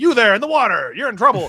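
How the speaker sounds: announcer voice through bullhorn. Retelling a favorite movie scene, quoting Mike's bullhorn voice at the couple in the water. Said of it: "uses the bullhorn like".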